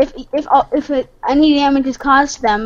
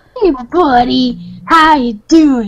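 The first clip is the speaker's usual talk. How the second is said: pet-talk voice, as to a dog. Player greets a zombie pigman that wandered out of the nether, like petting a dog. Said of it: "You sound like you're, like, petting a dog".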